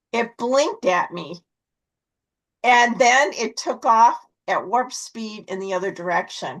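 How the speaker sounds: usual speaking voice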